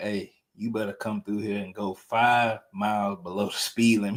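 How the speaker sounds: soft, hushed stage half-whisper. Retelling an uncle's warning as police appeared: imitating someone half-whispering. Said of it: "He started whispering".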